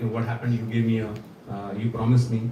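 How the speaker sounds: ordinary talk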